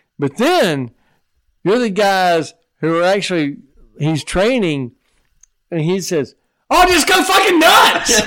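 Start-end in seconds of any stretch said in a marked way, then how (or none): 6.8-8.3 very high, loud, unhinged, manic wild-man holler. Recalling dj training, the speaker quotes the trainer, imitating a wild madman. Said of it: "he's like this madman".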